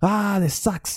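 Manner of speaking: very high, frustrated, fed-up blurted outburst. Speaker acts out their own moments of frustration, acting out own frustration. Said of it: "I get really frustrated and I'm just like".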